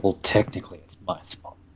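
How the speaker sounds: hushed, whispered mutter under the breath. Speaking in character about whose spot it is: muttered under breath. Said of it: "Under my breath".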